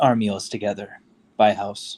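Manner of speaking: gentle, soft-spoken voice. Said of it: "Knox's normal way of their sort of soft voice".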